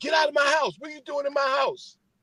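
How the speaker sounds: shrill, very high screaming, acted out. Retelling how a man in a closet turned on people in his house, imitating someone screaming. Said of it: "he's screaming".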